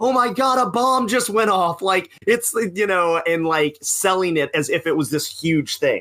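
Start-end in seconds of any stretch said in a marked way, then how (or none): 0.0-1.8 mock, high, over-the-top ringside announcer scream. Arguing whether a moment was planned, imitating Tony Schiavone mock screaming.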